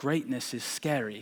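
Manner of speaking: put-on soft British accent, narrator-style voice. Describing a commercial to listeners, quoting its narrator: Nike ad narrator British accent. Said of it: "my British accent's amazing".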